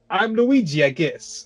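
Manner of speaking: flat, slow, effortless delivery. Mocking how the actor played Luigi: imitating John Leguizamo as Luigi. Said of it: "Leguizamo is just like".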